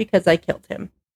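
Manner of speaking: plain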